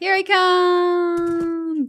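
dramatic announcer voice, high, slow drawl.

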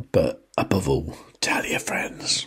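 quiet, hushed whisper. Late at night with the daughter asleep, speaker closing a video: whispering. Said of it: "I am whispering a bit at the moment".

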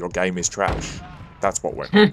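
ordinary talk

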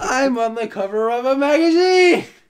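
very high, very loud, overblown exaggerated inflection. Gaming with friends, repeating a running joke with exaggerated vocal inflection. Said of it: "It with vocal inflection".

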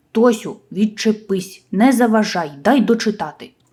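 annoyed, irritated, exasperated. A brother who is reading answers his little sister who keeps pestering him, irritated. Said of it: "роздратовано відповів".

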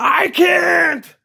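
high, rough, strained yell, can't drawn out. Arguing with another character while stuck in the dark: yelling. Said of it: "so quit yelling".

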